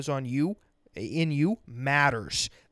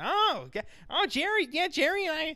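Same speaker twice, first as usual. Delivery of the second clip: high, slow, drawn-out put-on woman's voice; 13 semitones higher than usual. Imitating how a woman might have talked to him: imitating a woman talking. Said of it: "Maybe she wouldn't have talked like this".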